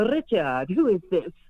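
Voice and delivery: put-on lovely Russian-accented voice. Retelling walking into a yard and being greeted; imitating Leela's Russian accent. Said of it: "in her beautiful Russian accent".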